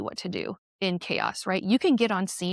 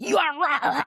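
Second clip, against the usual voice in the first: raised, pitched-up, angry telling-off yell; 8 semitones higher, 4 dB louder than usual. Recounting confronting a husband's employee who revved his car, retelling own yell. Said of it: "And I just yelled at him".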